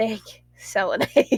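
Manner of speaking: quiet muttering under the breath. Voicing a character muttering away from others: muttered under her breath. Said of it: "really low under her breath".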